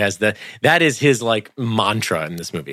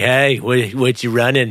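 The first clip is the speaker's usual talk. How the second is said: put-on creepy male voice; 2 semitones higher than usual. Acting out a character creeping on someone at the gym: imitating a gym creep. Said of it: "he's kinda gym creeping on him".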